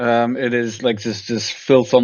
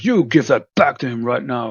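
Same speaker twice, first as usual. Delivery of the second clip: heavy, booming, commanding voice. Running the game, the narrator voices a figure who interrupts two fighters, heavy booming voice. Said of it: "a very heavy booming voice".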